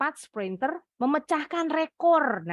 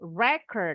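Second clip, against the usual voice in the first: record with stress on first syllable RE; 4 semitones lower than usual. Explaining record as a noun meaning vinyl disc: stress on first syllable RE. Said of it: "Kalau stressingnya ada di suku kata pertama, ini artinya kata benda. Record, piringan hitam".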